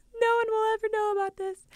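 crying, pitched way up, very high and tearful. Telling a story about themself, the speaker acts out past words while crying. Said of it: "I'm like crying".

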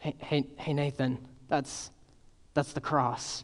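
soft, polite whisper. Retelling how the youngest son leaned across the table: imitating a polite whisper. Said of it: "and whispers, trying to be very polite".

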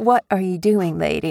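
ordinary talk

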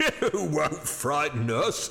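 laughing huskily. Narrator reading the commercial's reply to Hurst, with a husky laugh. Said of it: "said the commercial with a husky laugh".

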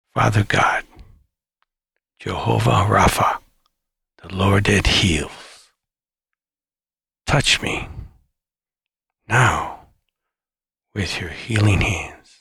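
slow, measured, deliberate delivery.

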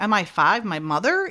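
ordinary talk

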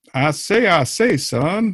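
blustery rooster character voice. Casting cartoon characters with a co-host, a speaker does a Foghorn Leghorn voice. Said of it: "No, that's Foghorn Leghorn".

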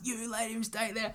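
mock very high, furious screaming tirade. Retelling a confrontation, the speaker quotes their mum at a drug tester: retelling mum's scream. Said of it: "I've never seen her scream at an adult before".

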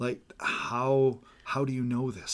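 wondering tone full of marvel and awe. Showing how a passage could be read with more wonder, in an awed tone. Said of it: "in a tone of voice with more wonder".

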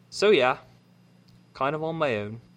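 British-accented speech.

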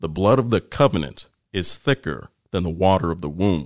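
normal talking voice

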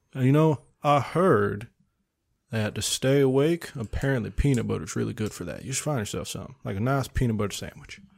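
put-on polite southern gentleman accent. Giving advice about staying awake, in a nice southern gentleman voice. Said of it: "he's a nice southern gentleman right now".

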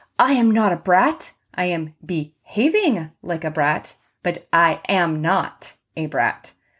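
usual speaking voice

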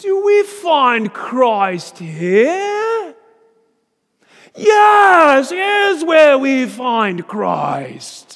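put-on very thick British accent, very loud, very high. Retelling a man who writes Christ on the classroom floor before seminarians: thick British accent. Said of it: "in a very thick British accent".

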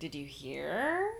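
pitch lifting up on the word hear. Podcast hosts open the show, repeating its title with upward inflection. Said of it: "You got to get that upward inflection".

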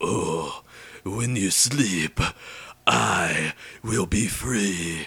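put-on slow, drawn-out, terrible French accent. Retelling what Spider-Man says in what you're watching, in a bad French accent. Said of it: "That's not even a French accent".

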